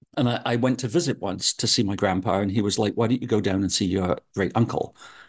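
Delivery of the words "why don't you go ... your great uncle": ordinary talk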